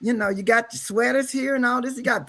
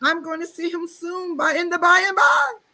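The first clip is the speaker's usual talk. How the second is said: put-on higher-pitched, happy, elderly grandmother voice; 6 semitones higher than usual. Acting out how a grandmother talked about dying: imitating grandmother. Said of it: "that's how she was".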